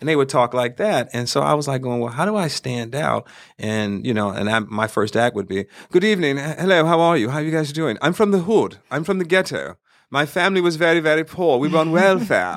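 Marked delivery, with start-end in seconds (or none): 5.9-12.6 put-on posh British accent, pitched up. Recalling the opening of a first comedy act, in a british accent. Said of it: "British accent".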